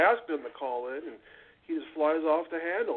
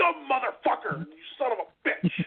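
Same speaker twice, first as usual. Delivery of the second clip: acted furious, high-pitched cursing rant; 8 semitones higher than usual. Retelling a caller's reply to a text, imitating someone cursing angrily. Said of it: "That was a really good impersonation".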